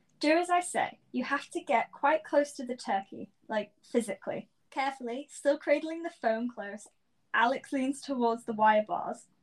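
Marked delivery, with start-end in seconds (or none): none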